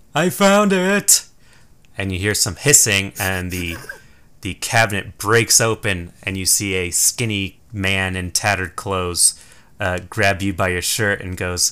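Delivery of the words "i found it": shrill, very high screaming cry. Voicing a voice heard from a cabinet: screaming. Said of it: "you hear a voice scream".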